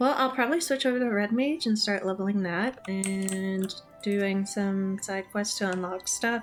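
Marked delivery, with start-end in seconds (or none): none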